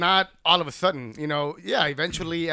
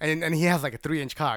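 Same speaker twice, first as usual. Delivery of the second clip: normal talking voice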